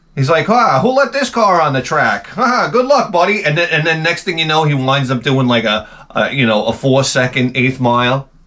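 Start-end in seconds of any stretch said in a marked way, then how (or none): 0.5-3.5 put-on very old, higher-pitched announcer voice. Retelling what the eighty-five-year-old announcer said about a car: imitating an eighty-five-year-old announcer. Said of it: "he's like this eighty-five-year-old guy".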